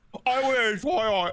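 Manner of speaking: high, slow, drawn-out mock British voice.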